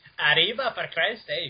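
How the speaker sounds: attempted accent sounding Irish. Voicing a line in an attempted mexican accent: attempted mexican accent, sounds irish. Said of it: "No, that's fucking Irish".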